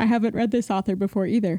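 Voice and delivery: speaking through a yawn. Talking about starting a new thriller by an unread author, yawning while speaking. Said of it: "pardon my yawn".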